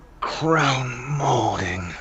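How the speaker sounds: put-on seductive voice, "crown" drawn out. Saying a plain word to the others: put-on sexy voice. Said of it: "molding would be so sexy".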